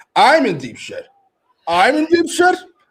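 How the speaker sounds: play-acted, shrill, very high, loud, deeply offended outcry. Retelling how Rena reacted when Tony warned her, imitating Rena sounding offended. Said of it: "She sounded so offended".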